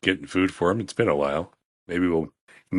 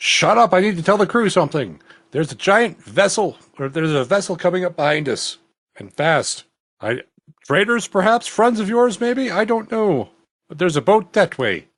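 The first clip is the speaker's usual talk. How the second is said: very high, loud, hollering shout; 13 semitones higher, 4 dB louder than usual. Voicing a lookout calling down from the crow's nest: shouting down in character. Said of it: "is gonna shout down to him".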